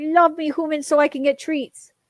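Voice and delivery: voice put on for a cat speaking. Voicing a cat talking to the humans: voicing the cat. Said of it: "He's like".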